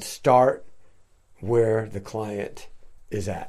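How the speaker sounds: slow, deliberate, measured delivery, word by word. Explaining a social work expression to an interviewer taking notes: said slowly. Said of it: "You said it slowly".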